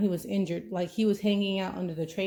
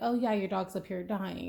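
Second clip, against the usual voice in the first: put-on teasing, joking tone, quieter; 4 dB quieter than usual. Retelling her hubby's phone reply about the dog; retelling a joking remark. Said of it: "he's like jokingly like".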